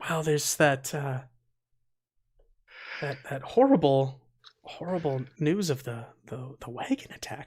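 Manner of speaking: hushed voice. Voicing an innkeeper's wife telling guests the news: hushed voice. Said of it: "she says with a hushed voice".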